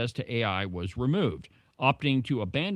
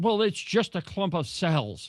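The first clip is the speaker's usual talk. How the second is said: exasperated, fed-up, frustrated voice pitched up; 6 semitones higher than usual. Retelling what an interviewee said during an interview: imitating a frustrated retort. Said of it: "he got so frustrated that he said".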